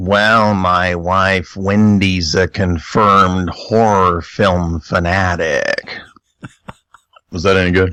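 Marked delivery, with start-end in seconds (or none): 0.0-6.0 put-on character drawl, very slow, every word drawn out. Warming up with a practice line, Jack impression. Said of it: "let me do my Jack line first".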